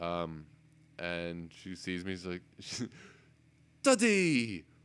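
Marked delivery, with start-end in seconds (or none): 3.8-4.6 put-on British accent, much higher, louder. Retelling his daughter spotting him after two weeks apart, imitating her British accent. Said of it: "she ended up picking up a British accent".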